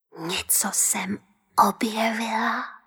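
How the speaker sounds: whispering. Answering the one who just found her, whispered. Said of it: "zašeptala Nelinka".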